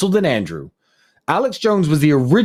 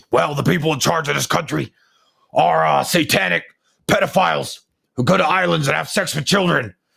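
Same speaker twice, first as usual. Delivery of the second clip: gravelly, creaking put-on voice. Doing an Alex Jones impression of what he said years ago. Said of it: "I'm going to do my Alex Jones impression".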